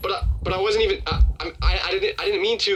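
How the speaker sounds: halting stutter, tripping over and repeating words. Speaker acts out his reply after being told of felony prison time, retelling his own stuttering. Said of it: "I'm stuttering".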